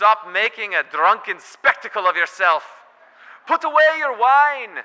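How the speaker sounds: very shrill, very loud put-on Irish brogue. Retelling what a man in the temple said to a woman, in an irish brogue. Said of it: "in his best Irish brogue".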